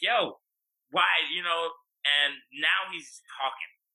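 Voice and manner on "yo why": put-on heated, angry, confrontational tone. Retelling arguing back with a police officer: imitating his own angry retort. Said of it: "I'm angry. My heart is racing".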